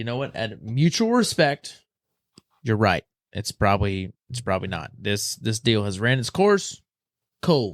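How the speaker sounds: normal talking voice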